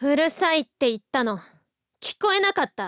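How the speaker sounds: annoyed, rude, irritated tone. Acted argument, answering the other character, rude annoyed tone. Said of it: "なんだよその言い方".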